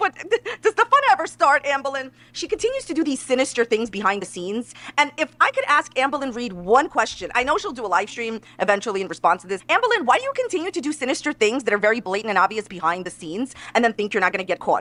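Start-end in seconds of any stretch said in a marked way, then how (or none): 0.0-2.1 words breaking into laughter, pitched up. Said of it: "I'm sorry I'm laughing".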